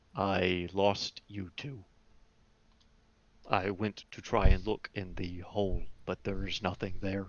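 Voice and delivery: low, held-down speaking voice. Narrator voicing a character who looks at the two others: low voice. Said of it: "says in a low voice".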